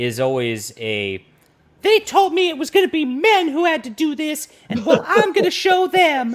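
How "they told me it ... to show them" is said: very high, very loud, shrill put-on woman's voice. Talking about how Hollywood portrays women, the speaker does a mocking woman impression. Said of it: "that's my impression of a woman".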